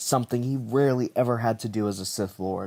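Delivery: ordinary delivery, nothing marked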